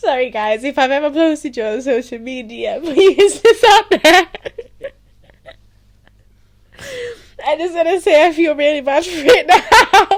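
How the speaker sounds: laughing till crying, very loud and high-pitched. Apologizing to viewers while laughing, then saying it made them cry: laughing so hard crying. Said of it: "No, I'm actually crying".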